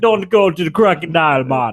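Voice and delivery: exaggerated put-on backwoods Louisiana bayou accent. Mimicking how an actress was made to talk in a commercial: exaggerated backwoods Louisiana accent. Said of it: "talk like she was some like backwoods Louisiana psychic lady".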